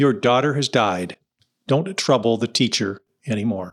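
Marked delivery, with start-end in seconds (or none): none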